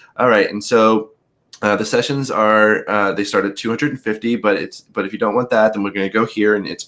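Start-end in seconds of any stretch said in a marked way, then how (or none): none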